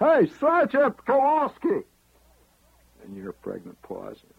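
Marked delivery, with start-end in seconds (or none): 0.0-1.9 shrill, booming, very high, very loud holler. Recalling a soldier calling out during a card game: retelling a holler. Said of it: "He hollers".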